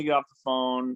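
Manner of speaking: usual speaking voice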